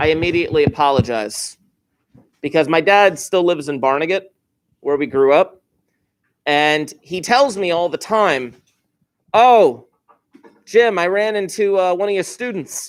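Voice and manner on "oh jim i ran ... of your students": put-on heavy Brooklyn accent. Retell what your dad tells you all the time, in your dad's Brooklyn accent. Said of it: "he's got a little bit of a Brooklyn accent".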